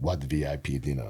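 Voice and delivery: very low, deep, hushed, quiet voice. Retelling a celebrity snubbing a sponsor dinner: good Arnold impression. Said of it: "That's a good impression".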